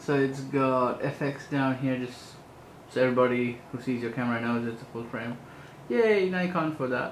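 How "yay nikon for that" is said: fake cheering, dripping with sarcasm. Speaker walking through a nikon camera's features notes its fx label: sarcastic. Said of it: "I'm being sarcastic".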